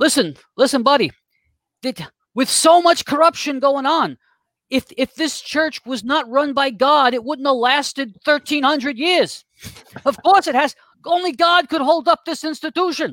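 put-on Brooklyn-accented voice.

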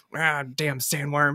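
mumbling under breath. Describing a movie character reading the paper, speaker mumbles his line under his breath. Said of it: "he's just mumbling under his breath".

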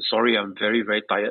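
imitated apologetic tone. Retelling what a tired pitcher said on arrival: imitating an apologetic tone. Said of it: "very apologetically".

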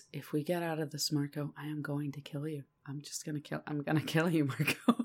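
eerily calm, very deep, low, soft, hushed. Retelling Jake threatening Marco, imitating Jake, weirdly calm. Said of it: "he says in a weirdly calm voice".

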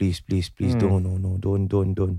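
mock mutter under breath. Imitating someone hoping a story isn't true: Edwin Tong mumbling under his breath. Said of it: "mumbling under his breath".

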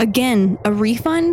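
ordinary delivery

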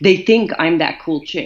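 ordinary talk

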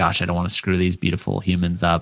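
ordinary delivery

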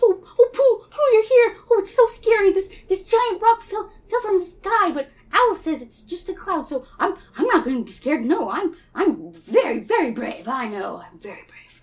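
high, slow, stumbling little voice. Acting out a story scene where a rock fell: Piglet voice. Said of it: "Oh, Piglet, you're the bravest".

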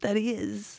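walking-zombie voice. Trying out a line while being coached, the speaker uses a zombie voice. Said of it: "It's like zombie meets walking".

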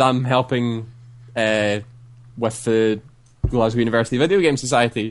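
ordinary talk

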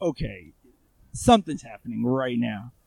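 ordinary delivery

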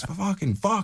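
very high, shrill, acted scream. Retelling an interview guest throwing headphones: imitating someone screaming. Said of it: "he's screaming down the hall".

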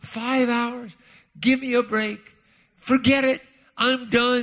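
mock fed-up angry outburst. Recounting a man's advice about prayer, acting out an angry outburst. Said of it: "I remember I was so mad".

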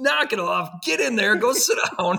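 very high, loud, acted-out yell. Retelling what the speaker would scream at a kid outside the building, retelling a scream. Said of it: "You could almost hear me screaming at him".

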